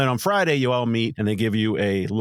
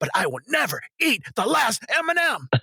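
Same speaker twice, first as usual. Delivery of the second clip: put-on angry ranting voice, higher pitch; 11 semitones higher than usual. Retelling a monologue performed in an acting class: imitating an angry rant. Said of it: "really pissed off about it".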